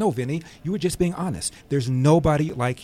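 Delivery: plain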